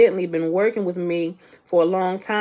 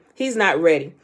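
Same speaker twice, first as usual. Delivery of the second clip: ordinary talk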